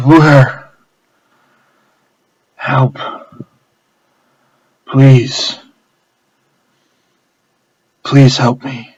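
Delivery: exhausted, broken, desperate, distressed pleading. Narrating a story, a staggering man begs the bartender for help, clearly in distress. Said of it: "a man who is clearly in distress".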